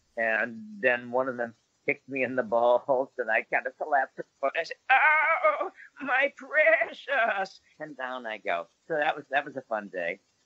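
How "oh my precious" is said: very high, squealing wizard voice. Retelling a film scene after being kicked: Ian McKellen as Gandalf imitation. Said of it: "my best, uh, Sir Ian McKellen imitation as Gandalf".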